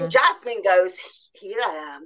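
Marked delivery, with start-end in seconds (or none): 1.3-2.1 low, throaty, guttural, lustful sultry murmur. Voicing the jasmine oil speaking as a goddess: low guttural sensual voice. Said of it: "she moves the voice down into the guttural orgasmic zones".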